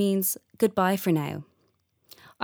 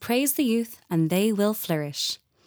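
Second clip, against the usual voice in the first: ordinary delivery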